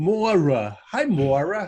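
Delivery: Brooklyn accent, a touch stronger. Showing how a name sounds when said more Brooklyn-y: more Brooklyn-y accent. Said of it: "I tend to get a little more Brooklyn-y when I say your name".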